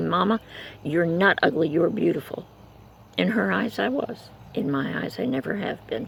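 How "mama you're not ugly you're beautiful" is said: normal talking voice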